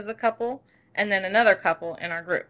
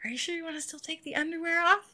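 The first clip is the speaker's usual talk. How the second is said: hushed, soft, pitched-up half-whisper; 7 semitones higher, 7 dB quieter than usual. Retelling what was said during a tantric class: retelling a half-whisper. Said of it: "I whisper in his ear".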